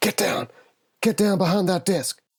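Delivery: high-pitched, hissed delivery. Speaking as Rose in a narrated scene, Rose hissing. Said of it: "Rose hisses".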